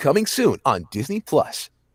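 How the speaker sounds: bright, airy, happy announcer voice with swooping pitch. A voice actor demonstrating their commercial range; happy, bright Disney Plus promo voice. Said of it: "it's very happy, really upper in the register".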